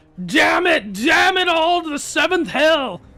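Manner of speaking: very high, loud, full-chested yell. Coaching someone on how to deliver a line: said with your chest. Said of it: "say it with your chest a little bit".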